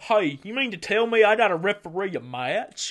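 put-on loud, dumb-sounding southern accent. Imitating a man with a heel character, in a stupid southern accent. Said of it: "it's like the stupid southern".

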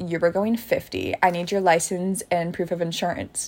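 usual speaking voice

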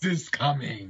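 thick put-on Austrian accent. Introduced on the show, trying to annoy the host with an Arnold Schwarzenegger impression. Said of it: "this impression of the horribly portrayed Mr".

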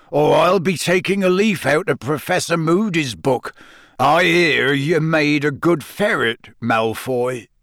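growling voice. Hagrid, his smile gone, answers malfoy's complaint, growled. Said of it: "he growled".

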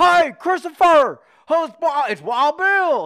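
booming voice, very high-pitched and very loud. Retelling a New Year's phone call from Wild Bill: Wild Bill impression. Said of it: "He calls me up on New Year's, and he's like".

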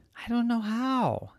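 very high-pitched fairy godmother cow voice. Reading a story aloud, the fairy cow answers Roxanne; fairy cow character voice. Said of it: "A fairy cow appeared. / "You've got wings and a wand, but you can't even hold it because you don't have hands. / "That's me".

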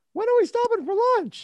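put-on high boyish voice.

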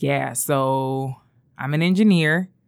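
mock awkward man voice, acted awkwardness. Retelling how a guy at a club approached her: imitating an awkward guy. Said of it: "felt like a LinkedIn, like, exchange".

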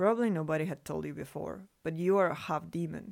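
usual speaking voice

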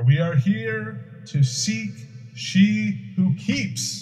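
booming, very loud, very slow, high, drawn-out full-force delivery. After sounding a horn through the halls, speaking again with all possible force. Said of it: "with all the force I can muster".

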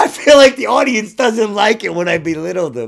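loud mocking voice.

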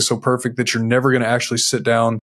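normal talking voice

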